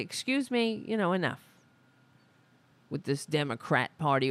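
ordinary delivery

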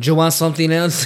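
put-on heavy Mexican accent, old lady. Acting out the old lady at Jalisco's, in a thick Mexican accent. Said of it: "thick Mexican accent, is always like this old lady".

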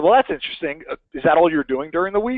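pointed, sarcastic tone. Retelling a question put to a coaching client: retelling a sarcastic question. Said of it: "I say that sarcastically, of course".

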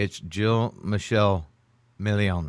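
mixed French and Spanish accent. Speakers take turns pronouncing a name, french spanish accent. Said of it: "I did it with my French Spanish accent".

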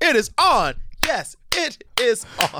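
very high pitch, slow, drawn-out delivery. Doing a voice you have worked on for a long time, Oprah voice. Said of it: "I like your Oprah voice".

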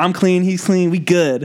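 put-on high Southern accent. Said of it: "southern accent".

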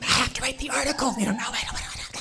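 hushed whisper. Speaker retells hovering by a door with a companion, whispering. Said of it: "We're whispering, like, just quiet".

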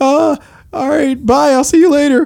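high-pitched voice. Showing how a voicemail goodbye sounds when said in a high register: high register. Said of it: "if you said the same thing in a high register".

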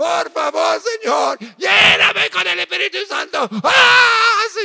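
mock, very high, very slow, screaming begging cry. Retelling a woman pleading with God in Spanish: imitating a woman screaming at God. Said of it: "She was just screaming at God".

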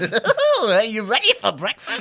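bouncy, high, loud, sing-song cartoon voice. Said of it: "That sounded like Tigger".

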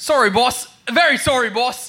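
put-on London Cockney accent. A buffoonish underling answering the boss, Cockney accent. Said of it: "They both speak in Cockney accents".

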